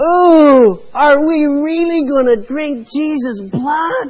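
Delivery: put-on very loud, very high, piercing child's voice. Retelling what a little boy called out to his parents from his chair: loud piercing voice. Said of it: "in a loud voice that pierced the room said".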